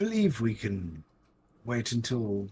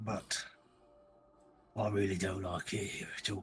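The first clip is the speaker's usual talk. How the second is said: put-on upper-class posh accent; 7 dB quieter than usual. Speaking to the others, in a posh person impersonation. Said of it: "putting on my best impersonation of a posh person".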